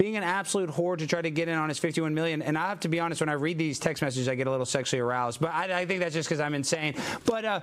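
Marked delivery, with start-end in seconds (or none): none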